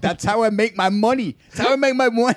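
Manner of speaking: shrill, high, furious acted ranting yell. Retelling how a man yelled at her, retelling a man yelling. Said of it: "And he's yelling at her like".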